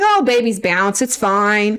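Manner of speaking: mock casual, breezy, unbothered, dismissive tone. Retelling what the head cardiologist said: imitating a nonchalant tone. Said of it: "he was just really nonchalant".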